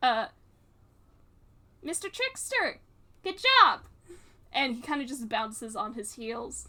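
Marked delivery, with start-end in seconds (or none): 1.8-3.8 put-on high, loud child's voice calling out. Voicing a kid who greets a character stepping off a bus: kid's voice. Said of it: "I don't remember how to do your voice".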